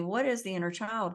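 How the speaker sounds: ordinary delivery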